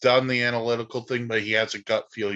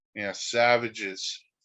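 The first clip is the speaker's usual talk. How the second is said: usual speaking voice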